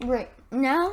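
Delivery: voice cracks, breaking on the word "great". Teaching a 3D modeling tutorial, with a voice crack. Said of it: "voice crack, I guess".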